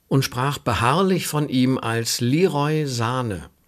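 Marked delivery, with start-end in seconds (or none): 2.2-3.4 slow delivery, wrong stress on Sane. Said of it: "ignorierte die richtige Betonung".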